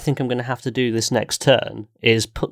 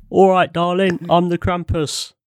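Cockney accent, pitched slightly higher; 6 semitones higher than usual. Asked by the group to do a Cockney, playing the Krampus. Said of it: "Do a Cockney".

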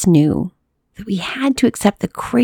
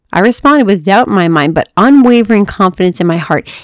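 ordinary delivery, nothing marked

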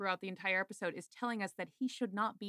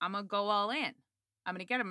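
mock angry villain voice, furious. Retelling a scene where the villain is pissed: imitating an angry villain. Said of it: "He's pissed and he's like".

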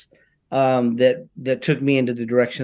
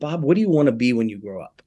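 ordinary talk

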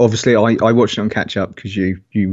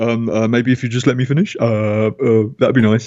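put-on childish, tetchy, irritable voice. Retelling how a politician reacted in an interview: imitating Corbyn like a tetchy ten-year-old. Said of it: "It's that kind of attitude".

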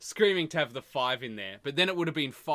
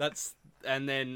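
normal talking voice

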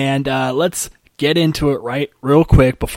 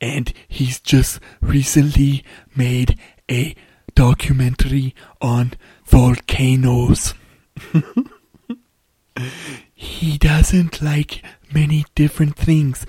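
put-on German-accented voice. Describing a filmmaker's volcano documentary in his voice: Werner Herzog impression. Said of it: "He kinda talks like this".

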